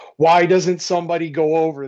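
high-pitched, loud screaming. Retelling how he yells at the Capitals on TV: imitating own screaming at TV. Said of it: "hears me screaming at the T V going".

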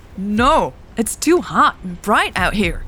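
high-pitched voice. Narrator reads Elle answering a voice's order: protesting. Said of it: "Elle protested".

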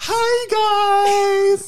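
shrill, booming, very high, loud, with hi stretched. Showing how Rachel would greet listeners: imitating Rachel. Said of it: "Rachel would be more like".

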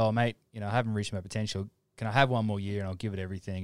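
plain

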